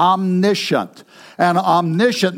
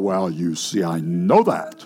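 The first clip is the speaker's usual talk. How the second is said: put-on deep baritone, lower and quieter; 12 semitones lower, 5 dB quieter than usual. Imitating a know-it-all missionary acquaintance's catchphrase: imitating deep baritone voice. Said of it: "he had a real deep baritone voice".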